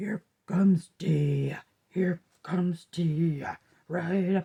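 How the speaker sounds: voice sunk down into a deep, low register. Showing the game played with a child coming up the stairs, in a deeper voice. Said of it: "And then my voice gets deeper".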